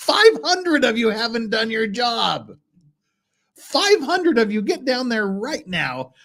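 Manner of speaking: high, shrieking, yelling cartoon puppet voice. The host calls out the audience for missing likes, in a screaming Muppet voice. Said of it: "It's my Muppet voice".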